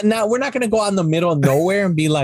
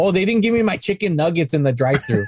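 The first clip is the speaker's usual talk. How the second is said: normal talking voice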